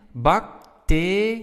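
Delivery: slow bacterie with te stressed. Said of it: "our stress is on te".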